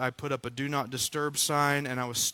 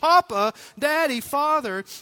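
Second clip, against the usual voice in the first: put-on high, loud crying out like a child. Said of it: "crying out as a child would cry out to a daddy".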